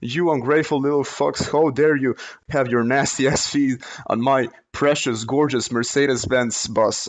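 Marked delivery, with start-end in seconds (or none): none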